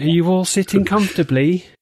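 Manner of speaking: high, condescending, patronising, talking-down tone. Asking everyone if they are sitting comfortably: patronising voice. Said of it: "I said in a patronising voice".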